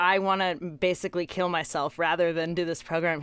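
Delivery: ordinary delivery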